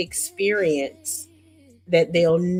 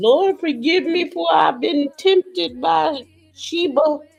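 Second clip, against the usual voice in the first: mock crying, male voice, higher pitch; 10 semitones higher, 4 dB louder than usual. Acting out a guilty man praying after sinning: imitating a man crying. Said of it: "he go get to crying at the altar".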